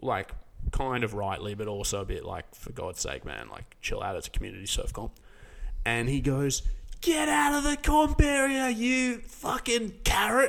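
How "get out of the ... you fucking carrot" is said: put-on very high, drawn-out howling. Speaker retells a man yelling at a surfer in the comp area: retelling a howled yell. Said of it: "just howling down at anybody".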